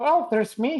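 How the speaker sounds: squeaky, high, put-on little voice. In a group scene, one character answers in a squeaky character voice. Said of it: "squeaky voice".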